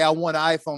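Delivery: ordinary delivery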